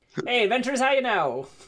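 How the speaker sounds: put-on heavy, laid-on-thick Canadian accent, slow and high. Voicing wood elves who greet the adventurers: heavy Canadian accent. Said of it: "either heavy Canadian or Minnesotan accent".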